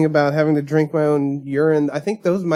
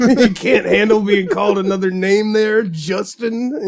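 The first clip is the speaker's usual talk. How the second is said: put-on scornful, belittling sneer, high-pitched, judgmental; 5 semitones higher, 3 dB louder than usual. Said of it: "channeling your inner Rip Torn".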